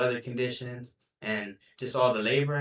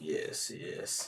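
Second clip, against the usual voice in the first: sinister, breathy, whispered villain voice; 8 semitones lower, 11 dB quieter than usual. Agreeing with the other speaker before asking something: evil villain voice. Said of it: "Why you sound like an evil villain?".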